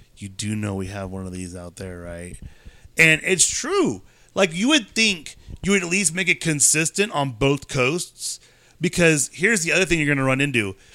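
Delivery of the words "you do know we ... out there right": confiding half-whisper, deep and very soft. Retelling how the skipper leaned in close, speaker imitates him half-whispering. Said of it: "he whispers".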